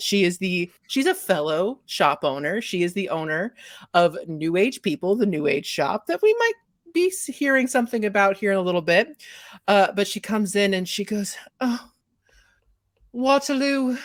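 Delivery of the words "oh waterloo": put-on fake British accent, pitched up. Voicing a fellow shop owner greeting Waterloo: fake British accent. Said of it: "her British accent is not real".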